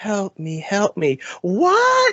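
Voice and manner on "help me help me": hushed, very soft, breathy little voice. Acting out a remembered scene of a captive's plea, in a soft, breathy voice. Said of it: "talking in that very soft, breathy voice".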